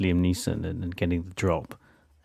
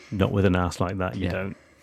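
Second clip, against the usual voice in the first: plain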